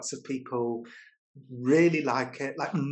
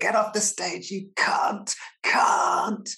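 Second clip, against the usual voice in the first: jeering, high heckling yell; 6 semitones higher, 3 dB louder than usual. Retelling a friend's story about a brutal gig, imitating hecklers shouting. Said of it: "people were shouting".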